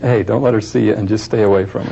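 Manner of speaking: ordinary talk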